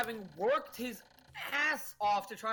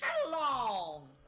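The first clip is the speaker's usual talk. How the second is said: put-on bird creature voice; 4 semitones higher than usual. Imitating a Pokemon's voice from the anime: Talonflame anime voice. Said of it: "Just love Talonflame's anime voice".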